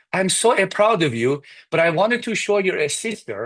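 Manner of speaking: put-on proud tone with Persian accent. Quoting mom about the saved report cards, in a persian accent. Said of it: "use a Persian accent".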